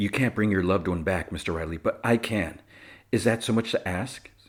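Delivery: normal talking voice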